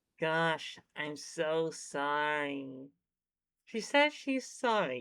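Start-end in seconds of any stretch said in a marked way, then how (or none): 0.2-2.9 very slow, drawn-out, insincere, sarcastic tone. Voicing the character's reply to a complaining character: sarcastic apology. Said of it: "It's sarcasm!".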